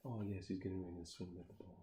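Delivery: very quiet, calm, quick golf commentator murmur. Describing funny match commentary, imitating a calm golf commentator voice. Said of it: "stereotypical like calm golf commentator voice".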